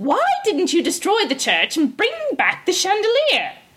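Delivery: high, swooping, berating, scolding tone. Reading a fairy tale, the cook scolds her servants, scolding. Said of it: "The cook scolded them".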